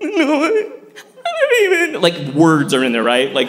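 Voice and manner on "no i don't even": mock very high, very slow, drawn-out guttural crying. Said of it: "really guttural".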